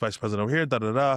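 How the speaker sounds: normal talking voice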